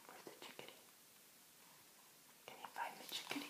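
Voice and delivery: unvoiced, whispered voice. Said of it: "reader whispers search game".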